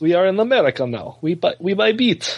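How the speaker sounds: put-on Russian-accented English. Imitating a russian woman while the others join in: russian accent. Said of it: "she's Russian".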